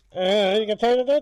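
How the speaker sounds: imitated intercom speaker voice. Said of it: "the whole change his voice".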